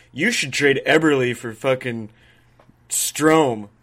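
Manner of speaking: loud, slow, play-acted, tongue-in-cheek sarcastic delivery. Imitating an assistant gm pitching a trade: imitating a sarcastic suggestion.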